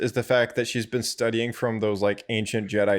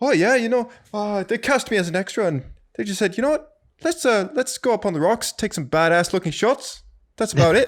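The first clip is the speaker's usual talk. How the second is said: bad fake New Zealand accent, very high pitch; 10 semitones higher, 4 dB louder than usual. Imagining how Taika Waititi would explain a sequence of three shots, bad Taika Waititi impression. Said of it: "That's a terrible New Zealand accent".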